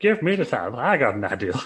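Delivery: creepy farmer voice with swinging, swooping pitch. Asked what voice he is doing, the speaker gives a Bob Holly impression. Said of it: "He sounds like the creepy farmer from South Park".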